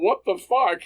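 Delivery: put-on, shrill, loud, very high-pitched shout. Retelling what was yelled while being tackled: retelling own yell. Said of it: "You can see the footage where I yell".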